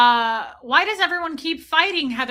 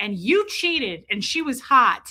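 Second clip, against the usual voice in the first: usual speaking voice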